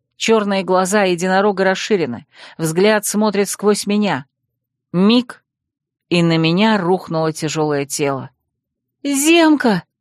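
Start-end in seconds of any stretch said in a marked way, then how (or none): 9.0-9.8 sudden, abrupt high-pitched cry. Narrator reads a woman crying out as a man collapses onto her, crying out. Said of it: "вскрикнула я".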